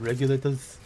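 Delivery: put-on heavy Austrian accent. Saying a name the way he always hears it, Arnold Schwarzenegger accent. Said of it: "I can't not hear the name regulators in an Arnold Schwarzenegger accent".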